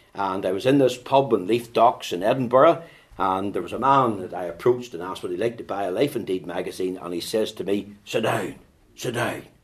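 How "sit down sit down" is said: heavy, big, rough-edged man's voice. Retelling what a man in a pub said to the speaker: big rough voice. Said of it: "Big rough voice".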